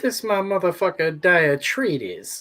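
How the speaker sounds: put-on Greek accent. Joking about a made-up Greek ninja, introducing him in a put-on Greek accent. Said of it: "Is that your Greek accent?".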